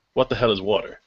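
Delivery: ordinary delivery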